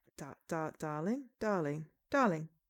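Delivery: English accent, halting restarts, stammered darling. Practicing the word darling for a role: English-sounding accent. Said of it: "that sounds more English now".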